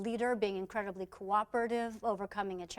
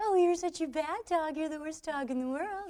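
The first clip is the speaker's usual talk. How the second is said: high, cheerful, affectionate scolding in a happy tone; 7 semitones higher, 3 dB louder than usual. Retelling a friend scolding their jumping little dog, mock-scolding in a happy tone. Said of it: "the dog is not getting that it's in trouble".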